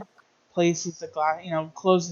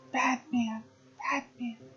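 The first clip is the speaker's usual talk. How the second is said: soft, high little half-whisper; 7 semitones higher, 7 dB quieter than usual. Describing what she did after looking up at the listener, retelling a half-whisper. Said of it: "And she just whispers".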